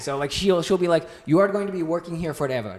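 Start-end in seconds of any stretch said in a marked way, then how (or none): 1.2-2.8 put-on Indian accent. Telling a mom story that always gets a laugh: imitating mom's Indian accent. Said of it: "say it perfectly, like you're Indian".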